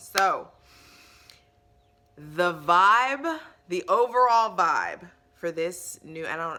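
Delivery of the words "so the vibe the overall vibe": loud shouted yelling delivery. Speaker starts describing the overall vibe after plugging their links, yelling. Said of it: "I don't know why I'm yelling".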